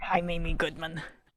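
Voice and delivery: put-on pirate accent. Introduce yourself in an anachronistic comic impression, as Amy Goodman as a pirate. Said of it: "she's a pirate in this impression".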